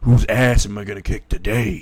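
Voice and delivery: deep, low put-on voice of a strange man. Retelling a scene, voicing a strange man standing on a bench, deep, low voice. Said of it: "he's saying that in a deep, low voice".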